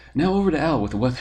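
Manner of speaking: loud, fast mock news anchor voice.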